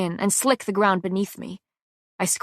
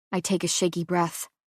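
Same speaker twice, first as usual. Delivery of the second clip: ordinary delivery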